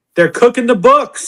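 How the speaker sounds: annoyed, getting fired up. Reacting to news that casualty numbers are reduced: irritated. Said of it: "She's already getting irritated".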